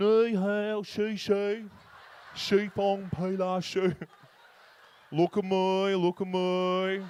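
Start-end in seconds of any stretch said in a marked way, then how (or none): 0.0-3.9 put-on Mandarin accent, very drawn out and very slow. Imagining a prime minister attempting Mandarin: Julia Gillard doing fake Mandarin. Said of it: "You imagine Julia Gillard".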